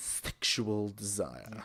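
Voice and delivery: put-on teasing, seductive, sexy voice. Repeating a phrase about aphrodisiacs for laughs: put-on sexy voice. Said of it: "Can I say that again?".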